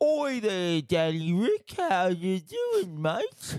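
blokey, high, swooping pub bloke voice. Teasing about the nickname danny ric, greeting him as some tosser at the pub. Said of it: "You sound like you're some tosser down at the pub".

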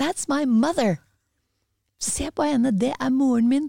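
excited, shouted exclamation. Retelling how the speaker's son shouted at the TV, imitating a shout. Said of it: "Og så roper han".

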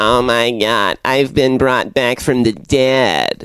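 thin, mosquito-like voice. Playing a reanimated girl in a joke anime plot: Fran Drescher voice. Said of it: "Fran Drescher's first fucking anime appearance".

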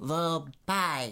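stopping the word halfway. Showing how to say a place name: stopping the word halfway. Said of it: "you stop the word halfway through".

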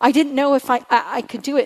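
imitated stammer, mimicked stutter. Retelling what a woman told the speaker, imitating her stammer. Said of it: "And she did this stammer".

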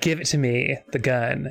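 ordinary delivery

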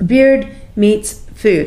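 very slow, deliberate, spelled-out pronunciation.

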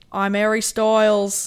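loud, big, put-on Australian accent. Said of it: "Why did you make him Australian?".

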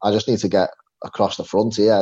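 normal talking voice

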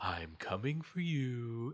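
cheesy horror-movie style whisper. Retelling a scene where Ultron threatens the Watcher: imitating Ultron's cheesy whisper. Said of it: "Ultron whispering to him was very, like, cheesy horror movie".

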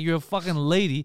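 normal talking voice

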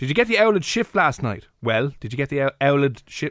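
put-on Offaly accent, old pronounced as owled. Showing a line from the hardest Irish accents: Offaly accent. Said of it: "Is that Offaly?".

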